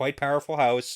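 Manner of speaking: ordinary talk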